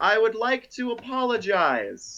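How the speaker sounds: very high, amplified, booming shout with swooping pitch. Game master voicing Lady Nemine as she shouts to the players, booming amplified shout. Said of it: "in this booming voice that is clearly amplified via thaumaturgy".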